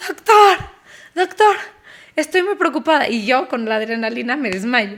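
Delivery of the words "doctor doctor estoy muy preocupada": beside herself, high, frantic yelling. Retelling a dentist visit, yelling to the doctor: retelling frantic yelling at doctor. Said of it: "le gritaba al doctor, pero fuera de mí".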